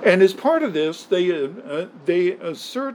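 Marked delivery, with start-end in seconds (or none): 2.0-3.0 assert stressed hard, drawn out slow, weighty. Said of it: "and I stress that word assertion".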